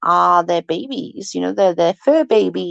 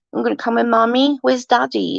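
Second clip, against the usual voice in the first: put-on doting, cooing baby talk; 4 semitones higher than usual. Retelling how they talk to him at home: imitating baby talk. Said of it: "we will talk to him like he's a baby".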